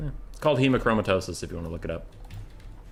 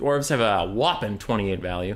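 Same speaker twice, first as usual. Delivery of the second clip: ordinary delivery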